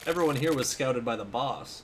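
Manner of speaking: plain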